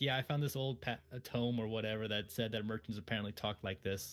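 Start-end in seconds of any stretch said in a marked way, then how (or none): none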